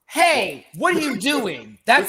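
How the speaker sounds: acted, in-your-face, high, swooping yell. Recounting a random man yelling at them, imitating someone yelling. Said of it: "who are you fucking yelling at".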